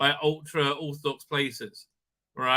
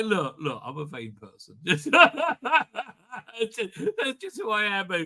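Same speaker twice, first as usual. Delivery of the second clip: swooping talk through giggles and laughter; 4 semitones higher than usual. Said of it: "I'm laughing 'cause I'm looking at the thumbnail".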